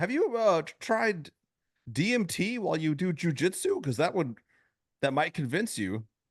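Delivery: very high pitch, arcing upward. Showing the other speaker an attempt at a Joe Rogan impression: Joe Rogan impression with questioning arc. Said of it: "an arc going on in his voice when he asks a question".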